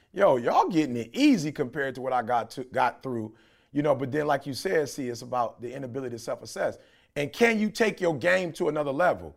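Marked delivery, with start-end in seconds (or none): none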